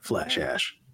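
low whisper. Saying the show's catchphrase to the group: whispering. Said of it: "did you whisper that".

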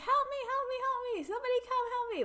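very high, acted-out damsel-in-distress screaming. Retelling a scene where a captured Leia cries for help: imitating someone screaming.

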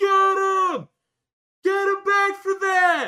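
shrill, very high, very loud screaming, "him" stretched. Retelling a fight, the speaker acts out everyone in the crowd, retelling a crowd screaming. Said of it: "Everybody is screaming like".

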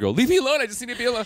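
play-acted very high, loud shrieking outburst. Act out a weeping man telling the producer to leave, imitating someone screaming. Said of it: "while he's like screaming at the producer".

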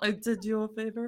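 put-on mafia don voice. Retelling what a bee said, Godfather voice. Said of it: "This is me trying to do my Godfather voice".

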